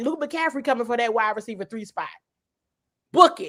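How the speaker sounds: acted, laughing through words, can't keep straight. Reading out a tweet that was almost posted, laughing while saying it. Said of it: "I can't even say it with a straight face".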